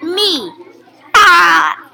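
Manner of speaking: booming, very loud, belted-out cartoon character voice. Playing a character on a pretend show: SpongeBob voice. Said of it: "That's my impression for SpongeBob".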